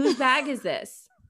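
put-on entitled, demanding tone. Retelling asking whose suitcase was left at the curb, mock-demanding entitled tone. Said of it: "In the most Karen voice".

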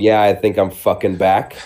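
normal talking voice

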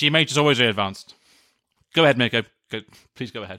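talking with mouth full. Wrapping up the show and handing over to Mikko: talking with mouth full. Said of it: "Are you eating?".

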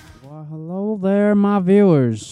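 badly done put-on voice, high-pitched and loud. Greeting viewers in a Hugh Hefner costume: worst Hugh Hefner impression. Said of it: "the worst impression of Hugh Hefner".

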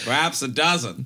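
good put-on fake Australian accent. Reading a quoted passage aloud, in a good Australian accent. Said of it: "who has a good australian accent".

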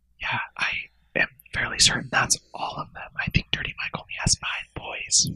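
soft, hushed whisper kept under the breath. Telling a game story, a character answers about the figures at the table, whispering. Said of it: "And Taffy whispers and she says".

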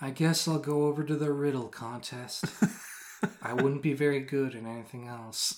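put-on very soft, dejected, mopey sad voice. Recalling playing a sad boy character, retelling lines in a sad voice. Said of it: "I just said everything's sad".

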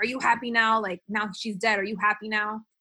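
mock-angry yelling. Retelling how a man at his testimony yelled at Carruth; imitating an angry yell. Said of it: "he like yelled at Carruth".

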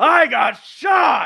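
very high-pitched, raspy, rough shout. Imitating how the villain in the movie yells a line: imitating a villain yelling. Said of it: "And the way he yells".

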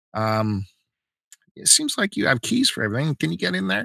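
sweet, high, sugary, polite customer voice.

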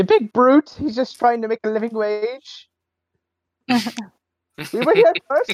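tiny put-on goblin voice, very high. A player voices a goblin looking up at a big brute: small goblin voice. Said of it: "being the small goblin that he is".

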